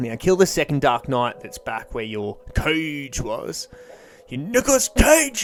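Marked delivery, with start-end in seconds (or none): 4.3-5.4 really bad, very high, squeaky put-on voice. Breaking off from giving directions, throw in a really bad Nicolas Cage impression. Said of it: "really bad impression".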